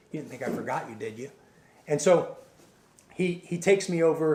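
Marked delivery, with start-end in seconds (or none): 0.2-1.3 close, very quiet half-whisper. Retelling what a man said into their ear: imitating a half-whisper. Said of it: "this guy whispers in my ear".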